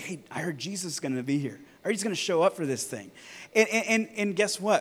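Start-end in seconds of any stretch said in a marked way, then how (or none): 0.0-3.1 hushed, soft stage whisper. Picturing crowds awaiting jesus, imitating people half-whispering. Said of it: "People are whispering to one another".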